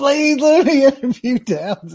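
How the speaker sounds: high, loud, slow begging tone. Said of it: "she's begging for this assignment".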